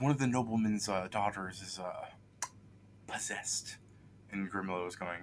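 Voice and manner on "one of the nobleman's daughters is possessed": hushed whisper, much quieter. A knight leans in to tell Grimlow something, whispering. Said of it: "the the knight whispers to Grim".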